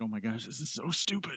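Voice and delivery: muttering under breath. Retelling what they thought while pointing at people around him, mumbling under breath. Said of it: "mumble under my breath".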